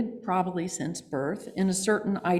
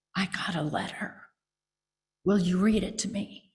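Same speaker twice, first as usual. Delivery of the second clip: soft, hushed, whispery voice; 3 dB quieter than usual. Retelling what an intimidating person said in the hall, retelling a whispery voice. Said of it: "he said in a whispery voice".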